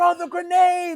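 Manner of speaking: very high, frantic, panicked screaming. Recounting how they yelled while playing a soldier, retelling a scream. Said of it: "I am screaming like I'm being shot".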